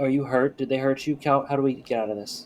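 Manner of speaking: soft, hushed, under-the-breath half-whisper. Half-whispering to a donkey in character: half-whispering. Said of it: "I'm gonna whisper to the donkey".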